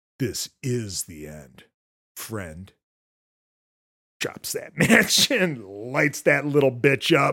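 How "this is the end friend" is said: dead calm, unbothered, low and soft voice. Recapping a horror film scene, acting out a character's line, imitating a super calm line. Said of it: "And Andy just super calm".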